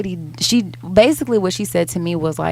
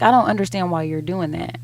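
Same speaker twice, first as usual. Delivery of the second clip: normal talking voice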